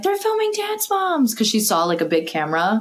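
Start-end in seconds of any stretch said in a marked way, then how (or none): 0.0-1.3 mock shrill, very high screaming. Speaker retells a girl who stumbled into the neighbor's house, retelling a girl screaming. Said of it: "starts screaming like".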